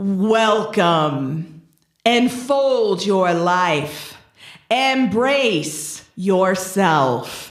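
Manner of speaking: deep, slow, resonant, echoing voice. Describing a voice heard over blaring music in a big building; deep echoing voice. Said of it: "you hear this echoing deep voice that says".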